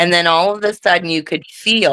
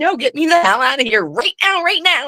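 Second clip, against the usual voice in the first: loud, high-pitched, pitched-up scream; 9 semitones higher than usual. Retelling being caught after falling back in fright, retelling a scream. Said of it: "I'm screaming".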